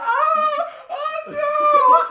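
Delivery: panicked screaming. Speaker acts out a creature's shocked reaction when its eyes are touched, screaming in panic. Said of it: "wiping the tears away from his eyes".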